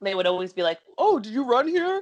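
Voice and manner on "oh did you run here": very high-pitched, squeaky put-on voice. Retelling what Lou's family would always say: imitating Lou's family's voice. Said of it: "I have to do that voice".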